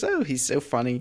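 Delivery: gushing through giggles. Retelling what a character says about an email: imitating a giggly gush. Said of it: "John gags when she giggles 'cause she says".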